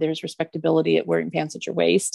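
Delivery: plain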